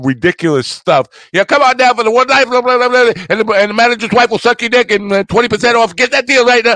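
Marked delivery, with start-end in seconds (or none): 1.3-6.8 shrill, high, loud yelling radio pitchman voice. Showing how the radio car commercial guys yell: imitating a screaming radio car ad. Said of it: "the F M radio car commercial where they scream at you and yell".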